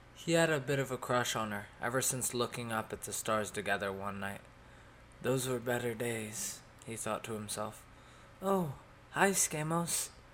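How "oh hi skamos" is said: feeble, weak, faint, slightly high little voice. Jess answers Skamos after he greets her, speaking weakly. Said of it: "she said weakly, her hands visibly shaking".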